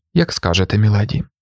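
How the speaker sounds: ordinary delivery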